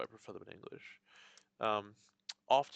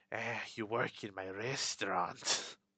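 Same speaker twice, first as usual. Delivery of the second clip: slow, drawn-out villain voice; 3 dB quieter than usual. Imitating a cartoon villain voiced as Peter Lorre: Peter Lorre voice. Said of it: "in an imitation of Peter Lorre".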